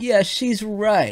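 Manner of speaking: high, very slow, drawn-out mock awe. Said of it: "everyone was like".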